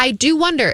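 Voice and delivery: ordinary talk, nothing marked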